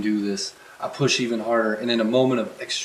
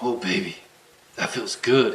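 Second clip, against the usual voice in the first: low, murmuring voice; 3 dB quieter than usual. Reading a novel aloud, voicing the male character: murmuring. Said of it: "he murmurs".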